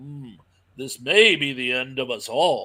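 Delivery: calm, slow statesman's voice. Retelling how the movie's hero answers a threat: calm Churchill-type voice. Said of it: "calm, almost Churchill type of voice".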